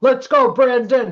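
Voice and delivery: sudden, loud, high-pitched shouted outburst. Retelling what a man at a checkout counter yelled: imitating a man yelling. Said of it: "he yelled".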